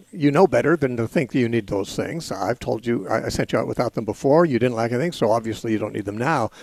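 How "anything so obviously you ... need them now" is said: normal talking voice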